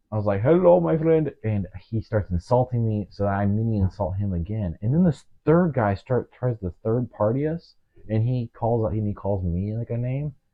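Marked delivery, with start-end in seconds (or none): 0.4-1.3 fake Indian accent, pitched up. Retelling how they greeted a guy, speaking in a fake Indian accent. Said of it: "I do a fake Indian accent".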